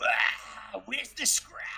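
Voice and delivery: ghostly, spectral orc voice. Voicing a summoned ghostly orc as it appears: ghostly orc voice. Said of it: "all of a sudden you'll hear".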